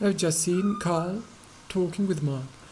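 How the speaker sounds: standard British, no r in Carl and Mark.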